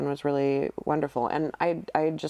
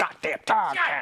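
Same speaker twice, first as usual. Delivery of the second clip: grumpy put-on voice, higher; 5 semitones higher than usual. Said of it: "Gotta do the voice when he does that".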